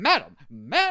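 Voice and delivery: loud, slow, flustered sputter. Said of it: "you know, like".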